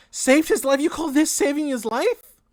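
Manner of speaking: piercing, shrill, very high, very loud cry. Retelling a scene, voicing the mother questioning the man who saved him: shrill mother voice. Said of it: "you hear the shrill voice of your mother".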